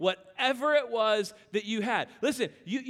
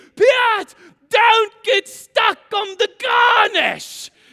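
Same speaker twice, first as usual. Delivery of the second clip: put-on screaming chef voice, higher and louder; 10 semitones higher, 13 dB louder than usual. Retelling a cooking scene where the chef screams at a cook: imitating Gordon screaming. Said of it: "Gordon starts screaming".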